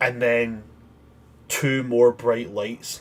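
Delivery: ordinary talk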